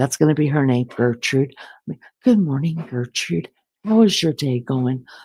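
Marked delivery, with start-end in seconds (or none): 2.2-5.1 put-on, very proper way of speaking. Imagining being served in bed and greeting the servant: speaking all proper. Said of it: "sit up in bed all proper".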